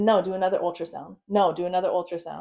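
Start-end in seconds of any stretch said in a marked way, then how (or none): none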